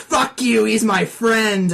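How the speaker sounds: acted yelling, loud, high and drawn-out. Retelling how the speaker and a friend yelled at each other during a game session, imitating the yelling. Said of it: "he's screaming at me".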